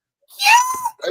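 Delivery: very high, loud, excited popping delivery. Retelling how Dan popped during the watch along: imitating Dan's voice going high. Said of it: "his voice went high".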